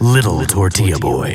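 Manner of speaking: deep movie trailer announcer voice. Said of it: "The in a world guy?".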